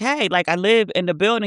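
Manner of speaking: usual speaking voice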